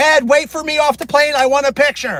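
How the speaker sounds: high-pitched, loud yell. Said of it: "she yells up".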